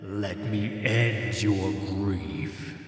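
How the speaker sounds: cold, lifeless dead man's voice drained of life. Narrator reads a voice speaking inside a character's head, cold and lifeless. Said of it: "The voice in her head was cold and lifeless, the voice of a dead man".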